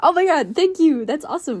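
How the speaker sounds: put-on bubbly, peppy voice, high and loud. Voicing a very social character thanking new fans: put-on peppy bubbly voice. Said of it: "Pippi-ass personality".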